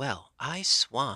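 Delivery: hoarse, rasping, frightened outburst. Narrator reads an aunt's startled reaction on a girl's return; hoarse, frightened voice. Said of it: "in a hoarse, frightened voice".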